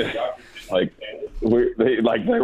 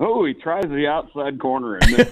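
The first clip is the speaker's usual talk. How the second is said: radio announcer voice, pitched up; 5 semitones higher than usual. Retelling an announcer's call from a baseball movie: imitating Bob Uecker. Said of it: "and Euchre goes like".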